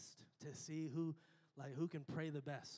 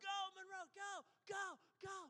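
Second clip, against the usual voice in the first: very high, stretched-out, drawn-out cheering yell. Retelling cheering for your kid at a swim meet: retelling yelling a cheer. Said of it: "and I'm yelling, like".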